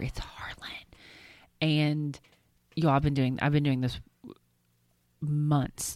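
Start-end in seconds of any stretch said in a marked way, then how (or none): 0.0-0.7 very soft, hushed whisper, barely voiced. Retelling how she prompts a child with his name: imitating own whisper. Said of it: "And I would whisper".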